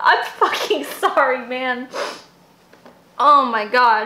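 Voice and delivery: talking while crying, through tears. Speaker reacts to a screenshot seen all week, crying while talking. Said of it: "I'm so mad at myself for crying right now".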